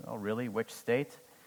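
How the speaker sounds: normal talking voice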